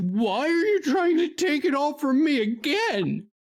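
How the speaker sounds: very high-pitched, shrill scream. Voicing a character who looks at a player and screams: screaming in character. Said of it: "over this thing's shoulder and just screams".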